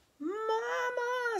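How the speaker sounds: very high, loud squeal, word drawn out. Reading a story aloud, a piglet cries to its mother as its stroller rolls downhill: squealing. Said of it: "squealed Pig Pig".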